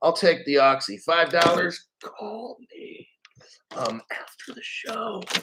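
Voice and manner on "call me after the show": playful, hushed, joking stage whisper. Joking about selling Oxy after the show: joking whisper. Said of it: "Why am I whispering?".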